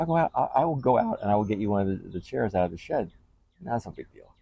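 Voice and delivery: put-on high, bright, eager, helpful girlfriend voice. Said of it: "She's like".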